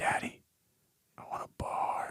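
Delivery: put-on barely audible, soft, slow childlike whisper. Retelling a child waking at night asking for a bar: imitating a child whispering. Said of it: "she whispers to me".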